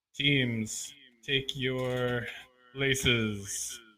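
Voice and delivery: put-on arena announcer voice. Narrating a game with three teams, switching to an announcer voice. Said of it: "announcer's voice".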